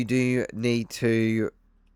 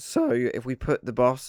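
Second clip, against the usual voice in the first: voice breaking and cracking mid-phrase. Explaining how to put the bus in neutral, with a voice crack. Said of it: "sorry about the voice crack".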